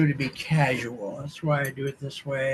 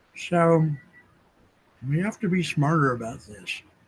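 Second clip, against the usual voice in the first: talking with mouth full, between bites. Admitting to eating during the conversation, the speaker keeps talking while eating. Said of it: "Yes, I am eating".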